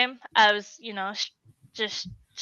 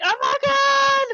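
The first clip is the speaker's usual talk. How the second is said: mock shrill, very high, tearful screaming cry; 3 dB louder than usual. Recalling her mom's reaction, imitating her mom screaming. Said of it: "she's just screaming".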